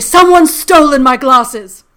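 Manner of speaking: very loud, dramatic, theatrical British dame voice. Retelling the mother's phone call about lost glasses, imitating the speaker's British mother. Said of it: "I can't do my mom without doing my mom".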